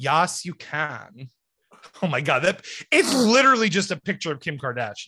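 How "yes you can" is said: put-on Valley Girl accent. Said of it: "I'm gonna do Valley Girl".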